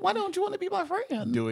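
squeaked, very high and cartoony. Imagining a conversation with him, done in a Mickey Mouse voice. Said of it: "in like a Mickey voice".

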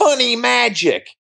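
mock small child's sudden shout, very high. Retelling a little boy running up during the show, imitating a little boy yelling. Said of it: "and he yells out".

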